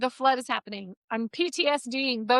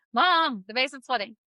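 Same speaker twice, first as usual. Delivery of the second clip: normal talking voice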